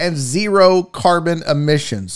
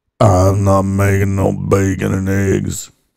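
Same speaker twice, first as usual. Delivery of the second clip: voice dropped way down, very deep and low; 11 semitones lower than usual. Imitating an ex-wife hungover the next morning: Sling Blade voice. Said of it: "my ex-wife sounds like Sling Blade".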